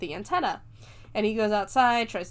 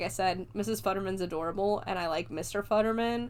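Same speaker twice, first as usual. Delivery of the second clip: ordinary delivery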